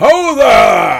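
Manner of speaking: gruff, very loud, very high-pitched call. Narrating a night scene, voice someone waking the sleepers: loud, gruff voice. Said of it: "a loud, gruff voice going".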